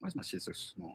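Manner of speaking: hushed, breathy whisper, almost no voice. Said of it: "and then he whispers".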